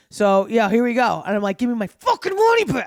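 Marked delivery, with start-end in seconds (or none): 1.5-2.8 put-on enraged shriek, pitched way up, furious and shrill. Recounting demanding her money back from a man in a souk: retelling a scream. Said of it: "I'll scream".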